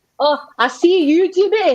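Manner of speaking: imitated Scottish accent. Trying a Scottish accent after being asked to do one: Scottish accent. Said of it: "A Scottish accent".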